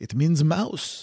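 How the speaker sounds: bad put-on French accent. Recalling a man's answer about a word, terrible imitation of Geoffroy's French accent. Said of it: "in his French accent, he said ... That was a terrible French accent".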